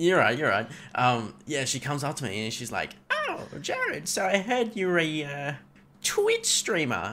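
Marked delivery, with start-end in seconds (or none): 3.1-7.1 high, swooping, drawn-out mean witch voice. Retelling what one of the managers said: Wicked Witch voice. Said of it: "she's coming over like the Wicked Witch".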